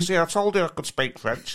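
put-on broad, strong Manchester accent. Retelling a man boasting to his missus, in a broad Manc accent. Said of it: "in his broad manc accent".

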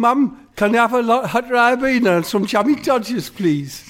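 very high, loud, put-on Geordie accent. Imitating someone shouting from their bedroom to Mum, in a Geordie accent. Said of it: "you're Geordie, aren't you?".

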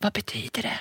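hushed, breathy whisper, barely voiced. Retelling how her partner reacted to the positive test, imitating a whisper. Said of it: "så han gick runt och viskade hela tiden".

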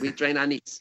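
put-on slight Filipino accent. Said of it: "if you've got a Filipino accent, you say".

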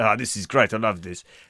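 put-on speaking with South African accent. Joking about Jango among the robot-building Geonosians, the speaker voices him in a South African accent. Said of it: "I don't know why South African now".

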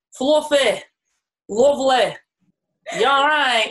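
Barnsley accent, careful separate single words. Asked to try single words in a northern Barnsley accent. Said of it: "your northern Barnsley accent".

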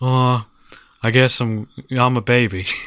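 put-on dry, deadpan voice. Imagining how another actor would voice the baby: Bill Murray impression. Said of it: "Bill Murray would be like".

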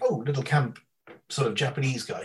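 ordinary delivery

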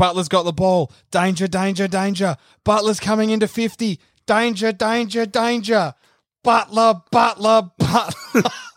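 high, drawn-out, frenzied commentator voice. Retelling a commentator's call of a goal: imitating BT losing his mind. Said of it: "He's just losing his mind".

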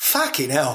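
put-on perfect, flawless Cockney accent. Retelling Zubizarreta entering the England dressing room, in a Cockney accent. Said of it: "in a perfect Cockney accent".

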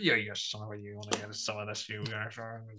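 hushed movie tough-guy voice. Describing a character who talks a bit like Joe Pesci: Joe Pesci impression. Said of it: "he does a bit talk like Joe Pesci".

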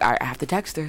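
ordinary delivery

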